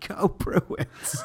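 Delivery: mock hushed, breathy, whispered cheering. Retelling a bar scene where a friend at a hockey game was screaming: imitating someone screaming. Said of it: "was screaming".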